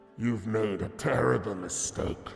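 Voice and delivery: rattling armored knight voice. Narrator voicing an armored figure who strides forward to speak, rattling voice. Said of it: "you hear kind of a rattling uh, in his voice".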